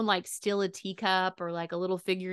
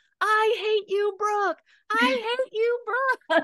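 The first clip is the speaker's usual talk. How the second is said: very high, shrill, screamed-out shriek; 4 dB louder than usual. Retelling being made to ride a roller coaster, retelling a scream. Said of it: "the whole entire time I'm screaming".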